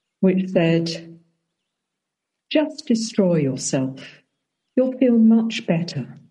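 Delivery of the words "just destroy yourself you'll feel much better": mock sweet, tender, lovely, kind, gentle delivery. Quoting a message heard after meditation: imitating a lovely, kind, gentle voice. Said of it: "in a very lovely, kind, gentle voice".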